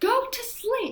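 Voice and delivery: high pitched, furious, angry screaming. Retelling what a woman screamed at a crying child, imitating someone screaming. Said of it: "like screaming".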